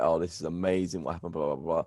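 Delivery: ordinary delivery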